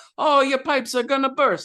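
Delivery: very high, exaggerated put-on Italian accent. Describing Luigi and his partner's act for customers, the speaker does a played-up Italian character voice. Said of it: "play up these Italian characters".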